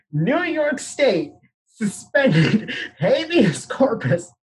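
high-pitched laughter through the words. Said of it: "I'm laughing 'cause the only response".

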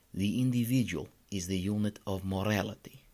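bad, mangled, put-on Russian accent. A speaker going through a text quotes Ayn Rand in a bad Russian accent. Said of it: "in her great Russian accent that I'm about to butcher already".

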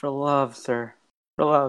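whispering in a character voice. Playing a character who leans to another's ear: whispering in character. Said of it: "go up to his ear and be like".

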